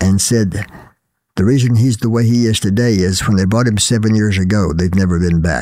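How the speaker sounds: ordinary talk, nothing marked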